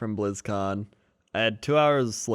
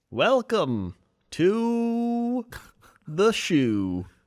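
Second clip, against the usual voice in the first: chirpy video game shopkeeper character voice; 11 semitones higher than usual. A host opening a morning show, in a video game NPC voice. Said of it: "you sounded like an N P C in a video game".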